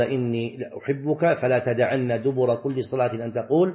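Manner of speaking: ordinary delivery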